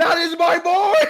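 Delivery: very high, loud, sobbing, tearful scream. Voicing a character cheering after a joust: Mace crying and screaming. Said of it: "Mace is full crying. He's going".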